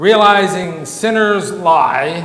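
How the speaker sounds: "sinners lie" stressed, slow and loud. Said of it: "I'll emphasize it".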